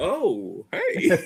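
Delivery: offhand, casual delivery with voice pitched very high. Showing how Raj reacted to the match news: imitating Raj. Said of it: "Raj went like this".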